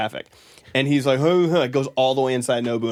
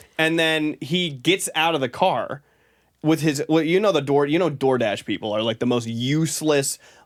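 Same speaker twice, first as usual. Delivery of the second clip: usual speaking voice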